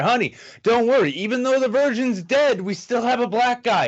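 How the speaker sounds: very high, screamed yell. Retelling a horror movie plot, calling after a girl running into the woods: retelling a scream. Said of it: "I'm just screaming at her".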